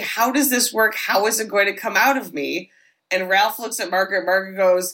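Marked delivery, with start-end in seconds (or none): none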